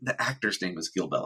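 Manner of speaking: ordinary delivery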